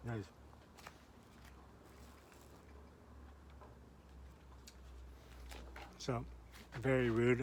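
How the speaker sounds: slow speech through a mouthful of food. A speaker tasting the meat they just sliced, talking with mouth full. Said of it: "I'm talking with the food in my mouth".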